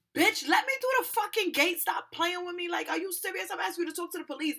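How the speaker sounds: mock full-on loud, wild, spazzing-out rant. Retelling how she yelled at a woman at the Metro gate, reenacting spazzing out. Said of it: "now I'm spazzing on her".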